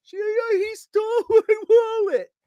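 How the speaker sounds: very high, very slow sobbing, bawling wail. Retelling the robbed woman's words during the chase, imitating a woman bawling. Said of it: "she's just bawling".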